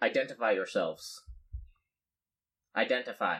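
robot character voice. Voicing flying robots that confront the players: robot character voice. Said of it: "the robots, upon seeing you, say".

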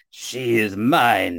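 ominous dark cry, mine drawn out. A game master voices a voice from the clouds: deep dark voice crying out. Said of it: "a deep dark voice from the clouds above you and from beyond the mountains cry out".

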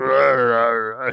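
put-on growled out in an old-man voice.

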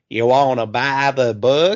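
put-on creepy old codger character voice. Repeating what a dude just said, in a Family Guy creepy old man voice. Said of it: "he sounds like the creepy old man from Family Guy".

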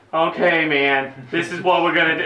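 talking like a beach surfer bro. Quoting a character from the film they're discussing, in a surfer dude voice. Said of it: "It like sounds like a surfer dude".

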